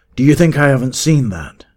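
high, furious snarl full of rage. Narrator reads the man with the silver bridle answering a companion, snarling. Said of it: "he snarled".

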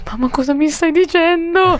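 high-pitched, shocked, stunned disbelief.

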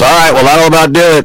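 acted out very high, barely-awake, half-awake drunk voice. Retelling how a drunk man answered the police: imitating a super drunk guy. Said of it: "he's barely awake".

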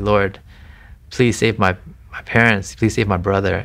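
normal talking voice

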